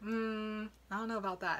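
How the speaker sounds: usual speaking voice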